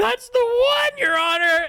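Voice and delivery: very high, slow, loud mock accusing delivery.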